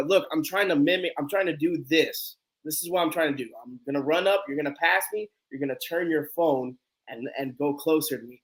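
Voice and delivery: ordinary talk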